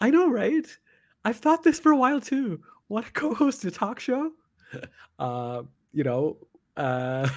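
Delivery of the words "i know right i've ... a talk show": very high, chatty voice pushed way up. Reading the other speaker's old reply aloud in their voice: imitating Vidica. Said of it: "here's the best impression you've ever heard of yourself".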